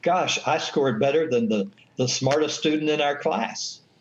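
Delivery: plain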